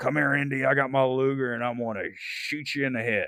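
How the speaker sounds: put-on drawled Southern accent, laid on thick. Mocking a one-note henchman in Indiana Jones: Holbrook impression, Southern drawl. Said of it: "you've got Holbrook going".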